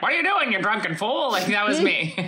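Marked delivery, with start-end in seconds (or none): 0.0-1.3 put-on high-pitched, scolding old-man voice. Retelling stumbling home drunk, imitating an old man scolding. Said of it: "the old man's like".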